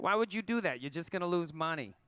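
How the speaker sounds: put-on New York accent. Quoting how a booking agency responded to the plan, in a new york accent. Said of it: "That's a New York accent".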